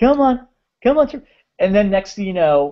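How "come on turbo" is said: put-on sweet coaxing call, much higher, slower. Retelling how someone calls the Zord: mock-sweet calling, like to a dog. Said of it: "Calling it like it's a dog".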